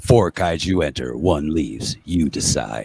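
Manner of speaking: deep, booming movie-trailer announcer voice. Co-host explaining a kaiju wrestling pick game to viewers, in a movie trailer man voice. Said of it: "Another movie man voice".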